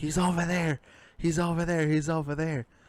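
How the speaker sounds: high scream. Retelling waking up at night pointing at a wall: imitating own screaming. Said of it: "I just started screaming, like".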